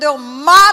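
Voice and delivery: very loud scream, "mato" drawn out. Retelling a girl screaming a threat: imitating a girl screaming. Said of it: "uma menina gritando".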